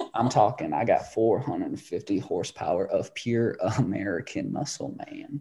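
breathy, half-whispered voice. Doing a requested impression from Dazed and Confused: Matthew McConaughey impression. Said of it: "What's your McConaughey impression?".

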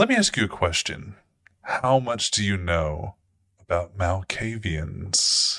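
seductive, almost malicious delivery. She puts a question to the listener, seductive, almost malicious. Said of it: "seductively, almost malicious way that she says".

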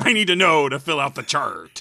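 deep, low, loud, booming twisted-doctor voice. Playing a Joker doctor questioning a patient: Doctor Joker voice. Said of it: "it's Doctor Joker".

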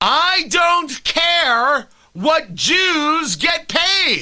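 screaming. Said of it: "should I scream it out".

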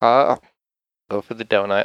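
begrudging tone. Answering a question about choosing a donut: begrudging. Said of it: "Why are you saying that begrudgingly?".

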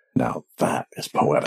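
breathy, whispered aside under the breath. Narrating a game, a professor character leans close to a prince: muttering under his breath. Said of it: "kind of under his breath says".

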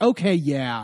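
mock patronising, very condescending, talking-down tone. Retelling a reply to a criticism: imitating a condescending tone. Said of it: "very condescending".

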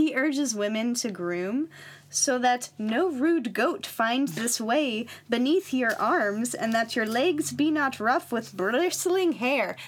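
put-on accidental Irish Scottish accent.

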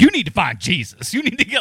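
put-on loud, slightly older lady character voice.

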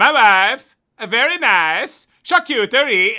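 fake accent shifting to Italian. Trying the word charcuterie in a Borat voice, which turns Italian. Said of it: "you get Italian instantly".

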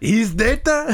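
high, bad mock French accent.

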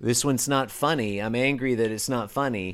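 ordinary delivery

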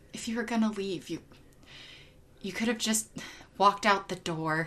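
very quiet, hushed, low-key delivery. Retelling a line after a hole is broken through his wall: quiet Dio voice. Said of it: "in this very, like, kind of quiet voice".

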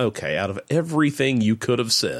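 ordinary talk

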